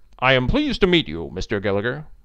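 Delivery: ordinary delivery, nothing marked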